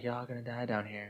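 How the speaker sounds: murmured, machine-like voice. Quoting the robot computer girl from the movie: Resident Evil computer girl voice. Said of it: "the robot computer girl".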